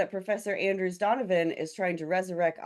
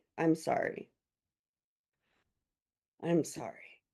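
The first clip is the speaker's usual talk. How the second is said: hushed, slow, shaken and flustered whisper; 4 semitones lower, 5 dB quieter than usual. Playing a character who was just shushed by the librarian: flustered, trying to calm down. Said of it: "She is slowly trying to calm herself back down".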